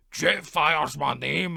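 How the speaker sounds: put-on big, loud, oversized, weird Scottish accent. Imitating a talking Jetfire toy's line: Jetfire toy's big weird Scottish accent. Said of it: "in a big, weird Scottish accent".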